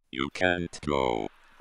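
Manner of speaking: very deep, gravelly, inhuman monster grumble. Narrator reads an inhuman voice speaking to a man struggling to sleep: grumbled, gravelly inhuman voice. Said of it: "grumbled a truly gravelled, inhuman voice".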